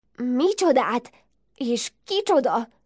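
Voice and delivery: frightened, spoken through chattering teeth. Narrator reading the star-eyed one's question to the ladybird, asked with teeth chattering. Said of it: "Kérdezte a csillagszemű fogvacogva".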